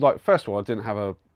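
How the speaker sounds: usual speaking voice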